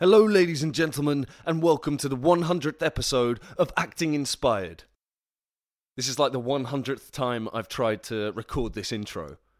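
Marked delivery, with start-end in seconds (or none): 0.0-4.8 overeager, hyped-up, overexcited, pitched-up voice. Host recording the intro for the 100th episode of acting inspired, overexcited. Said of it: "I think I'm overexcited".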